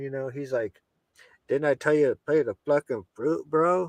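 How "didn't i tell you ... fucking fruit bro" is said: strong, hardcore put-on Chilean accent. Retelling what Renato said to the speaker, imitating Renato's Chilean accent. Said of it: "he's like a hardcore, like Chilean, like uh, accent".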